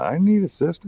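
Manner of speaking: put-on, very high, urgent, desperate scream. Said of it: "I'm just screaming".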